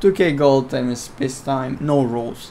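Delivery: ordinary talk, nothing marked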